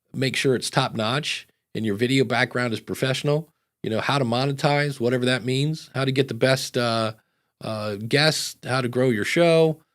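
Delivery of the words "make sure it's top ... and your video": usual speaking voice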